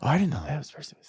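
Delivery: whispered voice. Retelling a moviegoer whispering to her husband: imitating someone whispering. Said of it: "she starts whispering to her husband".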